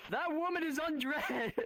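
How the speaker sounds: mock, very high-pitched, blurted shout. Telling a story about their dad's first time in VRChat, retelling dad's shout. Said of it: "He shouts".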